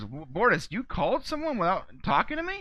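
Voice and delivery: imitated upset voice with rising pitch. Retelling a scene where the captain is upset with a crewmember: imitating Captain Ed upset. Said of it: "Ed is clearly upset with this".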